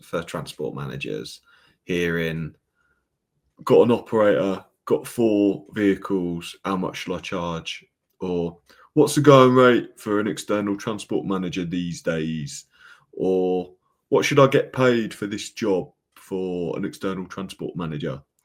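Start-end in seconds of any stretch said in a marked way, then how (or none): 3.6-18.2 put-on dopey, clueless, dim-witted voice. Mocking questions posted in Facebook groups for transport managers, in a put-on stupid voice. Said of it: "I don't know why I put the voice on".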